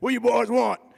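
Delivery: gruff, demanding voice. Retelling what the boss said on meeting them: imitating a gruff boss. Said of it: "real gruff".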